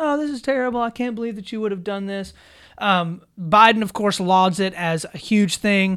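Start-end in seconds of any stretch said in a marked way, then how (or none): 0.0-2.3 acted crying, high, whining lament. Mocking a complaint about the new debate rule: mock whining as Donald Trump. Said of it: "crying about it".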